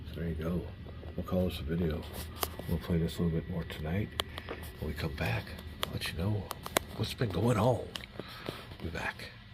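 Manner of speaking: soft, hushed near-whisper. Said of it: "We're able to, uh, speak full voice".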